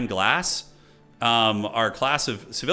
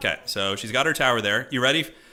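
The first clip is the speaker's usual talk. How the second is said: ordinary talk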